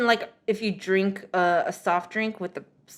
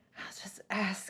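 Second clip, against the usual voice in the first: put-on whisper, quieter; 13 dB quieter than usual. Retelling a friend eyeing a kid's water bottle: imitating someone whispering to herself. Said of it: "whispering to herself".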